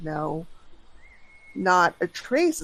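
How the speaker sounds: put-on defeated tone, woman's voice. Acting out a frustrated woman answering a question, imitating a defeated woman. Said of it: "defeated kind of".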